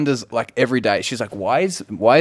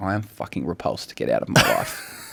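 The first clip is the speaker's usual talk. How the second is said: put-on woman's voice, much lower; 7 semitones lower, 4 dB quieter than usual. Describing trying a bedroom voice on a woman, imitating her reply. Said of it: "and she goes like this".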